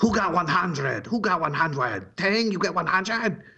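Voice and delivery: put-on Chinese accent. Retelling classmates' reaction to a perfect test score, imitating a chinese accent. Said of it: "I have a Chinese accent impression".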